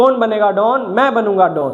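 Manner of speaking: ordinary talk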